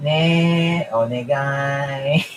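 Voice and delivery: put-on Japanese accent, long ne. Saying they're going to the anime club, slipping into a Japanese impression. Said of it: "Why am I doing a Japanese impression?".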